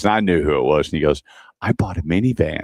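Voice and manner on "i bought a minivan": hushed, very soft, quiet voice. Speaker retelling a man's phone call to him, imitating a very soft voice. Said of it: "he goes in a very soft voice".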